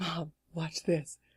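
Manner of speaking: sneaky, soft, slow, hushed aside. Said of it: "And I'm like".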